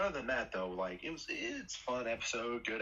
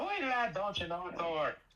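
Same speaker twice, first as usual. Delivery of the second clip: put-on Irish accent that sounds Minnesotan; 8 semitones higher, 4 dB louder than usual. Imitating a weirdly Irish character, the accent comes out sounding Minnesotan. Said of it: "that's that's Minnesotan".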